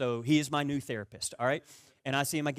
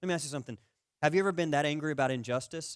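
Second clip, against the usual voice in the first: usual speaking voice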